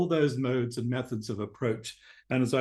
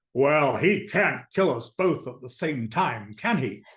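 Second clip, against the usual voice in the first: burly man's voice, slower pace. Retelling what a man carrying a big box said to you, in a burly voice. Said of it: "he says in this burly voice".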